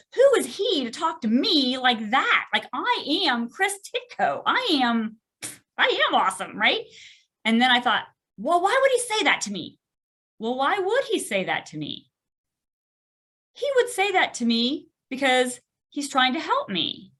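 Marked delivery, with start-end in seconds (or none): 0.2-6.9 angry, indignant, affronted ranting. Retelling how they felt after getting home that night, acting out being mad. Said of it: "I got home that night and I was mad".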